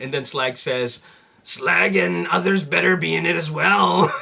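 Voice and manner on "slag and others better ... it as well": put-on flat, creaky, rough, monotone robot voice. Acting out a Dinobot joke shown on a phone: Slag Dinobot voice. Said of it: "that was my best impression of the Dinobots".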